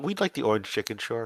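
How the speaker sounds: very soft, quiet, rushed murmur. Narrating a woman ordering for her table, quietly. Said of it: "says one woman quietly".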